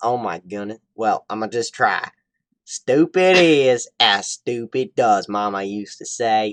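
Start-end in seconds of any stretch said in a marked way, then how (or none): 2.6-6.5 very slow, loud Southern country drawl. Speaker tries to pull out a country accent for listeners: country accent. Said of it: "into my country accent".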